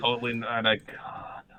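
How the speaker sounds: slow hushed whisper, barely audible. Repeating another speaker's line back to the group: whispering. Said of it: "Why did you whisper that?".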